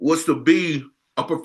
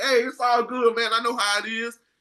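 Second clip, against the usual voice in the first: put-on words broken by laughter, pitched up; 7 semitones higher than usual. Retelling how a professional fisherman reassured him, imitating him laughing while talking. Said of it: "He laughing".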